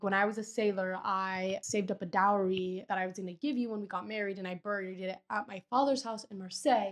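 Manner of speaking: plain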